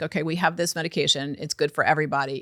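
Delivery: ordinary talk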